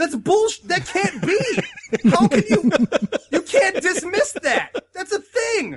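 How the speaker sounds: put-on, very high, shrill shouting. Recounting watching every episode in the living room, retelling shouting at the TV. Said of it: "I'm like shouting at the TV like".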